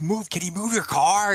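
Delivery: very high angry voice. Retelling a comedy sketch about a blocked driver: imitating a pissed-off driver. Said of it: "the guy's, like, pissed off".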